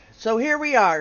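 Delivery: plain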